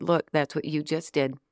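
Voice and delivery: normal talking voice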